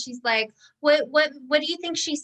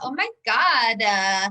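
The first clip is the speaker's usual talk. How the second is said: mocking voice with vocal fry. Showing how the speaker talks when upset: mocking voice with vocal fry. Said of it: "I talk like that to make fun of people".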